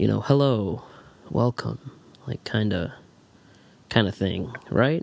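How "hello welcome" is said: soothing, calming delivery. A podcast host demonstrates a more relaxed opening in a soothing voice. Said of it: "someone with a soothing".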